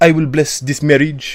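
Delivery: poncy, heavily laid-on French accent. Explaining how a medieval king really spoke, as King Richard in a poncy French accent. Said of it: "It would be very like Poncy French".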